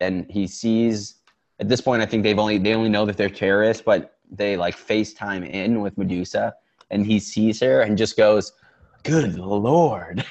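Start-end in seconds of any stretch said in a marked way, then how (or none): 9.0-10.2 surprised, caught off guard, "Lord" drawn out. Retelling how a movie police chief reacts on seeing someone: imitating a surprised police chief. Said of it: "he was just so surprised".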